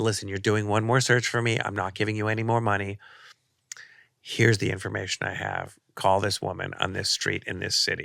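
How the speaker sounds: normal talking voice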